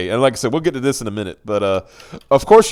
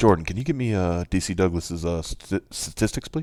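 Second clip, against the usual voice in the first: podcast-host impression, much lower and quieter; 5 semitones lower, 9 dB quieter than usual. Mid-rant about another man, a speaker does his Joe Rogan impression. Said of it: "Let me do my Joe Rogan".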